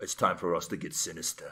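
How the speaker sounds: mock British man's voice. Retelling a plot where she comes home to a british guy: british guy voice. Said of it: "There's a British guy, and he's like".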